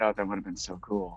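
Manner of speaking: quiet muttering under the breath. Voicing a character staring at the ground, muttered under his breath. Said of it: "just a little under his breath".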